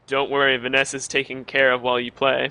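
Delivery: ordinary delivery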